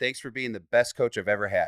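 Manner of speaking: plain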